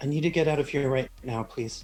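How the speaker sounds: small quiet voice. Narrator voicing a woman who looks up at Cassandra, very small, quiet voice. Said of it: "in a very small, quiet voice".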